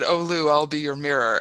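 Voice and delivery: ordinary delivery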